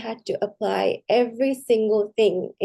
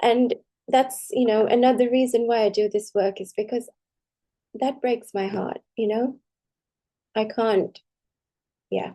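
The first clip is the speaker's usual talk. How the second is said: heartfelt, moved, emotional voice. Speaker explaining why they do this work, getting a little emotional. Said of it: "I'm getting a little emotional".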